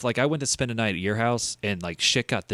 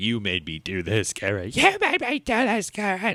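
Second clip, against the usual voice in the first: put-on angry movie-character voice; 2 semitones higher than usual. Retelling a movie scene's line: imitating angry Luke. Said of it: "Luke's all pissed off now".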